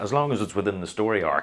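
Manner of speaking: ordinary talk, nothing marked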